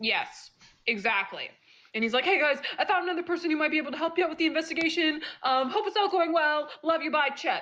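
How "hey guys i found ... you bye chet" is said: excitable, bouncy, super jumpy high voice. Reading out a letter from Chet to the players: super jumpy like Chet. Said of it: "super jumpy, like Chet is".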